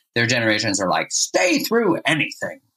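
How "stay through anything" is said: put-on very high, sing-song, swooping old-person voice. Speaker voicing the grandparents' generation: old person voice. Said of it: "That's my old person voice".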